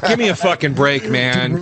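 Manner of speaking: usual speaking voice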